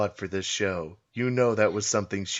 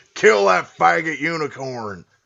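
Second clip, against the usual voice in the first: very loud, high, raging angry shout; 8 semitones higher, 8 dB louder than usual. Acting out horses described as shouting at a unicorn: imitating horses shouting. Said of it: "the horses that are shouting".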